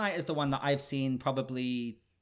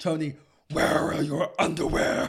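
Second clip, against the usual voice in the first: loud, growling superhero-style voice; 3 semitones higher, 5 dB louder than usual.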